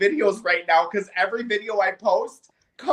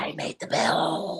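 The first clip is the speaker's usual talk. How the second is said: mock whispering, lower and quieter; 4 semitones lower, 8 dB quieter than usual. Imitating the president whispering strangely: imitating him whispering. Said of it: "starts whispering and starts talking like this".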